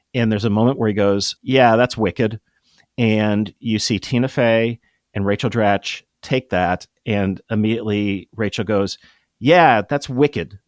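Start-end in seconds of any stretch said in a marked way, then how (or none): 9.4-10.4 put-on casual, offhand Boston accent. Retelling how Rachel Dratch repeated a line in a scene with Tina Fey, Denise voice in a Boston accent. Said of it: "in this Boston accent".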